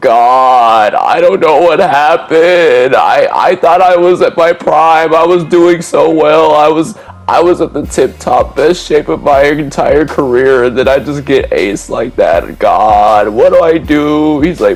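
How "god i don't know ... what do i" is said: mock tearful, about-to-cry voice, pitched higher. Retelling a call in which Jelani sounded about to cry: imitating someone about to cry. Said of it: "it almost sounded like Jelani was about to cry".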